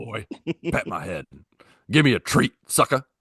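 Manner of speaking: tough-guy voice that slips out of character. Joking about what Kratos would say, voicing him: Kratos voice slipping into Mr. T. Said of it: "now I just turned into Mr. T".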